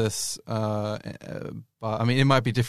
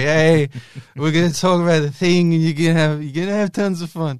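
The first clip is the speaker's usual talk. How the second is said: put-on sloppy, loud, pitched-up slurred presenter-style speech; 6 semitones higher, 8 dB louder than usual. A youtube creator showing how he talks in his videos now, slurring. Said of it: "now I'm just slurring all the time".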